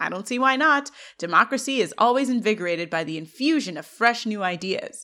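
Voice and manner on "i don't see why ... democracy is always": plain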